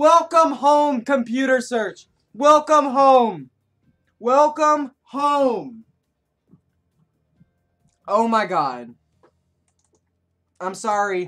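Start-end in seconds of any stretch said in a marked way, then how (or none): 0.0-8.9 overjoyed, loud, high yell, home stretched out. YouTuber finally getting computer search after saying it never comes, excited shouting. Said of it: "People with headphones, I'm very sorry about that".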